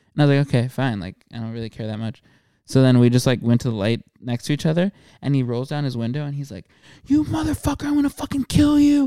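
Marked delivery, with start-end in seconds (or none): 7.1-9.1 play-acted, shrill, very high-pitched, raging scream. Retelling what another driver yelled at a traffic light: retelling a scream. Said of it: "like screaming at me".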